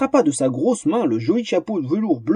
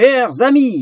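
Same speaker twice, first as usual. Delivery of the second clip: thundering, booming stentorian shout, pitched high; 7 semitones higher, 4 dB louder than usual. A small gnome shouts the duke's welcome to the arena, booming stentorian shout. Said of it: "hurla le petit personnage de sa voix de stentor".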